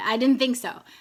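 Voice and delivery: put-on thick Ghanaian accent. Retelling his question after he explained the buildup: thick Ghanaian accent. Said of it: "in his very thick Ghanaian accent".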